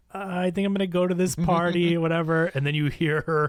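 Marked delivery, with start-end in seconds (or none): 0.2-2.0 meek, shrinking, hesitant, high little voice. Retelling a character saying he'll go to a party: imitating a timid voice. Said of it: "so timid and like".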